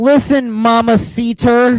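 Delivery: put-on Spanish with heavy English-speaker accent, high. Speaker mocks someone's attempt at speaking Spanish, doing Nikki Bella gringo-accent Spanish. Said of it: "She sounds like a fucking gringo".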